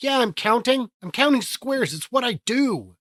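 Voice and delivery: high, loud excited voice. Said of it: "they'd see me mumbling and go".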